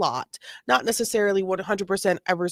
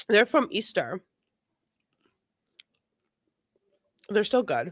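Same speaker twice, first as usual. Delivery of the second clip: words chewed around a mouthful of food. Talking just after putting candy in the mouth, talking with mouth full. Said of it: "I just put an M and M in my mouth".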